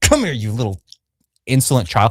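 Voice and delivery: unemotional, swooping, condescending talking down. Retelling how Rhaenyra grabs the girl's face: imitating Rhaenyra's condescending tone. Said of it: "Almost really condescending, talks down to her".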